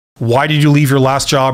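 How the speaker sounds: ordinary delivery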